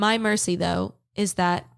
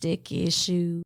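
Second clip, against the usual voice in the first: put-on crackly voice. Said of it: "that's what you sound like".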